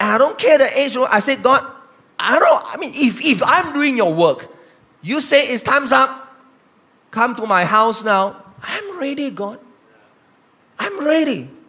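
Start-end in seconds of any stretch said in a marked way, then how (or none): 1.4-11.4 mock, loud screaming delivery. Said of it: "I have to pray like screaming".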